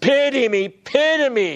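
acted, slow, high, drawn-out pleading cry. Speaker retells a man's cry from verse 20; acting out a cry for pity. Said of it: "a cry escapes from his lips".

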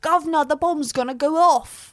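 high, loud, hammy fake British accent. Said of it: "he was like".

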